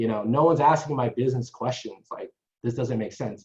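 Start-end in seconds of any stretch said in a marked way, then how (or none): none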